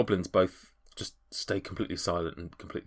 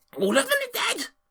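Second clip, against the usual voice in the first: very high, upset, panicked goblin cry. Voicing goblins told their friends died: panicked and upset goblin. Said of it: "a little bit panicked, a little bit upset".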